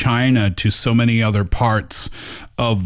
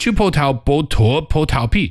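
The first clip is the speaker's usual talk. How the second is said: slightly faster pace than surrounding speech; 6 semitones higher than usual. Trying the Chinese tongue twister again: a little faster. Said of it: "Little faster".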